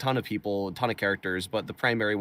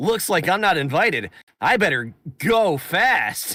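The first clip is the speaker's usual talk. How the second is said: very high, loud, blasting cartoon voice; 9 semitones higher, 9 dB louder than usual. Role-playing a meeting with Bowser when asked: Sonic the Hedgehog voice. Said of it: "I can do the Sonic the Hedgehog voice".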